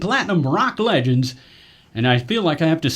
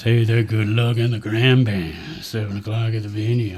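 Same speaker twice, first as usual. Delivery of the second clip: sexy, seductive voice, much lower; 6 semitones lower than usual. Reading a band announcement on air, the host tries it again; sexy voice. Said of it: "Let's try the sexy voice".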